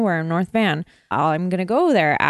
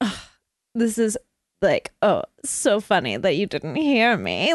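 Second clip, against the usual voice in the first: put-on smarmy voice, swooping sing-song. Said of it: "smarmy, weird guy".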